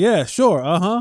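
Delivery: put-on, patronizing, mocking, condescending brush-off. Acting out John's reply to the news: imitating a condescending reply. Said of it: "that condescending look back there like".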